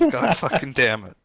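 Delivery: muttering under breath, mumbled to oneself. Recounting spotting a friend, showing how you swore: muttering under breath. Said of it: "I just mutter under under my breath".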